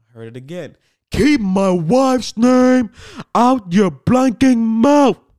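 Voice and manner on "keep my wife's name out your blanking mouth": furious, very loud, very high, deliberate, acted-out voice. Retelling hearing Will Smith after he slapped Chris Rock; reenacting Will Smith's angry warning. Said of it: "I just reenacted it for y'all".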